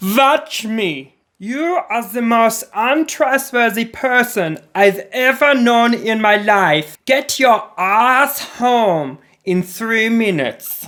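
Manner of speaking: high, slow, over-the-top exaggerated German accent. Narrator reading a post, voicing the person ordering op home, exaggerated german accent. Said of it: "an exaggerated German accent".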